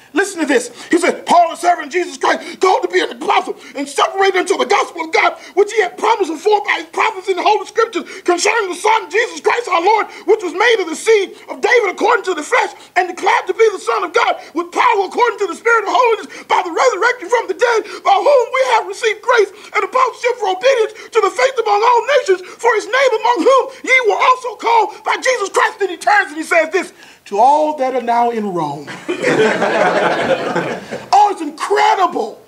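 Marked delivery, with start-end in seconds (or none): 1.2-25.7 high, fired-up, shouted enthusiastic reading. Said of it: "This is how it reads".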